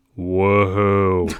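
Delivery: sarcastic, unimpressed, put-on child voice. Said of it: "just goes".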